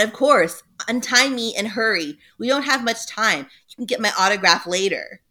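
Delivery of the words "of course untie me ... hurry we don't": plain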